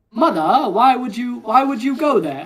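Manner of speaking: loud, posh, upper-class transatlantic accent. Explaining accents, giving an example of someone posh: posh transatlantic accent. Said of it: "that that is the transatlantic accent".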